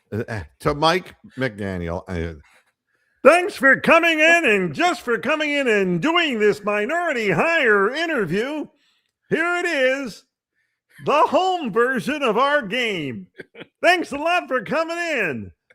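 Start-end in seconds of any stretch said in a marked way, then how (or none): 3.2-15.4 very high-pitched game-show announcer style voice. Imagining Dwayne Stat as The Price is Right announcer: imitating Dwayne Stat as game show announcer. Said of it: "it would sound something like this".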